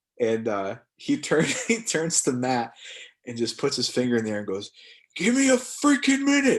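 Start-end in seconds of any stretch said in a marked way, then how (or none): 5.2-6.6 mock scream, much higher and louder. Retelling how a red-carded player screamed at Matt across the field, retelling a scream. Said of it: "Just screams it across the field".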